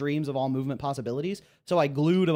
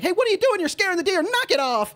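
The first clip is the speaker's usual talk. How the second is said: shrill, very high, fast, rushed yelling; 6 dB louder than usual. Retelling Insandio telling teenagers to stop scaring the deer: imitating Insandio yelling. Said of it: "quickly takes a couple steps forward and yells".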